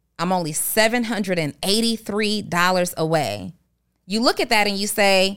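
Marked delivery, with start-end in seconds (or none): none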